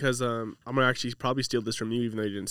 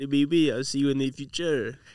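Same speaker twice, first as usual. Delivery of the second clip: put-on French accent; 3 semitones higher, 4 dB louder than usual. Told the last try wasn't French, the speaker tries again: fake French accent. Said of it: "do French".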